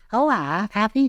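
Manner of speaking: Bristol woman's accent, very high rise on happy. Using a Bristol-speaking lady's voice to show the rise: Bristol lady voice, high rise on happy. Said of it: "our voice still goes up at the end, only it goes up very high indeed".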